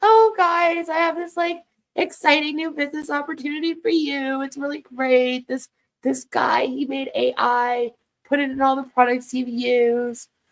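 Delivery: put-on sweet as anything, kindly older-woman voice. Mocking Sherry's business pitch to the group, imitating Sherry's sweet voice. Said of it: "She's like this sweet, like older woman".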